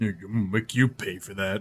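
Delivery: very low, very quiet mumble. Playing a character answering an innkeeper: mumbled under breath. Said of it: "I mumble under my breath".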